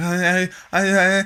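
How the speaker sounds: very high, slow, drawn-out stammering mumble. Retelling how a kid caught with the speaker's package answered, imitating a kid mumbling. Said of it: "just mumbling like".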